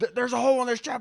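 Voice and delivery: very high, shrill screaming. Describing people on a ship with a hole in it, screaming. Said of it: "like just screaming like that".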